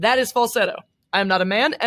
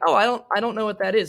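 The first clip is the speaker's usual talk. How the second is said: ordinary talk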